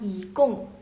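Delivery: yi in rising second tone, gong in falling fourth. Explaining mandarin tone change when reading yigong, second tone on yi, fourth on gong. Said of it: "berarti nada yi itu berubah menjadi nada kedua, jadi dua empat".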